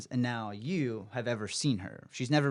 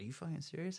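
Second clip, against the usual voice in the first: mock grave, hushed, somber, dead-serious disbelief; 4 semitones higher, 12 dB quieter than usual. Retelling a friend's reply to a ghost sighting: imitating someone turning somber. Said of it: "real somber, like, serious".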